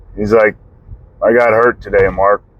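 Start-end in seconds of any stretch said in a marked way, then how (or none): 1.2-2.4 put-on flat monotone delivery. Retelling finding his dad on the couch, quoting Dad in a monotone. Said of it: "Just monotone voice".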